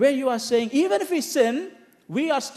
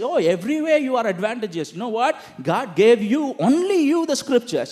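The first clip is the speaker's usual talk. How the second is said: mock sarcastic, mocking tone, faster. Explaining a scripture passage, acting out how he mocks them: retelling a mocking remark. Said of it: "he is mocking them".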